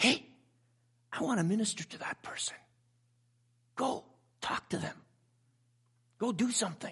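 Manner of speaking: soft, hushed whisper. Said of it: "and whisper".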